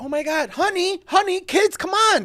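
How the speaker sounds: high-pitched, excited calling out.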